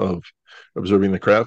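ordinary delivery

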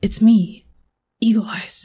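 high stage whisper. Grabbing a sneaking companion by the hand and whispering to them. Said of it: "And they whisper".

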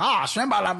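put-on Australian accent. Comparing accents, showing how Australians sound: imitating an Australian accent. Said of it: "Australians like".

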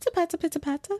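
put-on British lady accent, high-pitched. Retelling a video of a lady talking in her car: imitating a british accent. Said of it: "she has a British accent".

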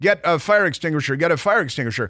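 ordinary talk

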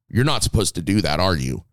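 mock-stern scolding tone. Recalling talking to the one held in their arms after being hit, retelling a stern voice. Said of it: "gave him the stern voice".

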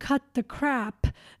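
ordinary talk

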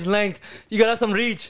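put-on Irish accent. Showing off to friends in a group voice chat, Conor McGregor impression. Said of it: "Why is his Irish impression better than mine?".

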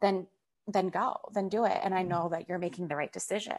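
ordinary delivery

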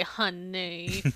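soft, drawn-out, facetious, sarcastic "honey". Explaining a family habit, the speaker says honey in a facetious, sarcastic way. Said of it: "kind of facetious. A little bit sarcastic. And so we say".

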